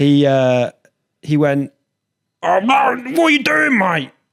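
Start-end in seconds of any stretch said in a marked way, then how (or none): 2.4-4.1 mock furious, very high, angry shouted telling-off. Retelling what a man shouted at them outside the station, retelling an angry shout. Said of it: "shouting at me".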